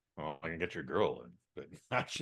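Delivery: deep rich voice, very low and soft. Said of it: "with that deep, rich voice".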